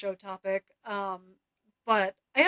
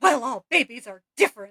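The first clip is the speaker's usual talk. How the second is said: mock, loud, really angry delivery; 3 semitones higher, 5 dB louder than usual. Retelling what a stranger at a restaurant said: imitating an angry retort. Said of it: "like, really angrily and stormed off".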